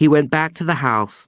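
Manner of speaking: ordinary delivery, nothing marked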